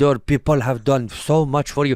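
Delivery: imitated, put-on Spanish accent. Retelling a funny line from a video: imitating a spanish accent. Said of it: "it's so funny when you hear him, he's like".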